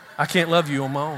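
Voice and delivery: heavy drawling Southern Arkansas accent. Speaker does the old Bill Clinton, saying the line in a Bill Clinton Arkansas accent. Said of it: "You do the old Bill Clinton. ... That was pretty good Arkansas".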